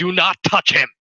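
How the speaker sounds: urgent, loud, high-pitched shout. Voicing a character who sees a friend reach out: shouting a warning. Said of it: "shouts out".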